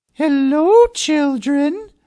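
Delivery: sugary, honeyed tone. Narrator reading a story, someone greeting the children: sweet voice. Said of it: "someone said in a sweet voice".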